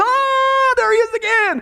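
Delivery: mock frightened high shriek, stretched out very slowly. Telling a joke, a man screams on seeing someone at the window: screaming. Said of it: "Al screams".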